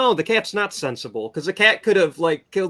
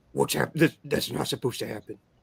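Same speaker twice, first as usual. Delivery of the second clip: rough, creaky, raspy movie-villain voice; 3 semitones lower, 6 dB quieter than usual. Retelling a reaction when something went wrong: Jigsaw voice. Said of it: "that's my best Jigsaw voice".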